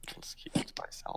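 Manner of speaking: soft, unvoiced whisper under the breath. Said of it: "it's a whisper".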